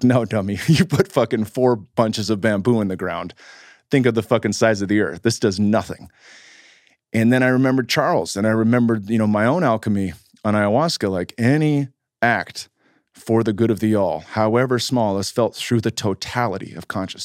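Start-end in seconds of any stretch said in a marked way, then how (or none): none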